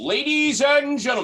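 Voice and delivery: very high, showy, booming, swooping wrestling announcer voice. Offering to do a bit for everybody, in a wrestling announcer voice. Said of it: "my wrestling my wrestling announcer voice".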